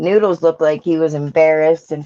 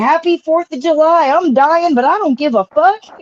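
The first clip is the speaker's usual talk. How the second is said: mock shrill, high, loud, defiant, unhinged yelling; 12 semitones higher, 4 dB louder than usual. Retelling what a man yelled at the neighbors: imitating someone yelling. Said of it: "And then he yelled".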